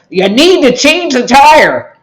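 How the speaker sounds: acted, shrill, loud, high commanding voice. Retelling the voice heard while speeding down the freeway, retelling a loud voice. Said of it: "I get this loud voice that says".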